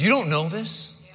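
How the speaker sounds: put-on sarcastic tone. Speaking to the congregation, acting out a sarcastic question he quotes, mock-sarcastic. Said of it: "He sarcastically says".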